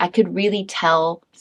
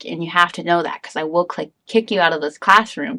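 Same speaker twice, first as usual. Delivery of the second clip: normal talking voice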